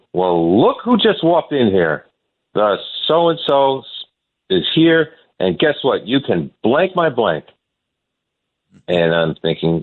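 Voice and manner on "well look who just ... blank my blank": mock taunt, loud, carrying, pitched up, called out. Retelling a player's taunt in the clubhouse: imitating Bonilla speaking loudly. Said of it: "he says to me loudly from across the room".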